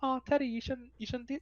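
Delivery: mock scolding teacher voice. Speaker imitates a friend who scolds him like an English teacher, mock-scolding teacher voice. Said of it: "you get a fucking little in your voice".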